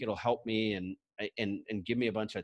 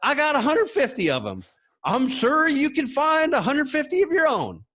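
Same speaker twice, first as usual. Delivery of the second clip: put-on very high, loud, swooping sing-song Southern accent; 13 dB louder than usual. Retelling what a man told him, imitating a southern accent. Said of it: "he speaks in a southern".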